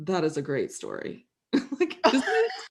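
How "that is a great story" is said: mock deadpan, dead straight, low-pitched and quiet. Retelling the sister's reaction to the story, imitating a deadpan reply. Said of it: "she was just totally deadpan".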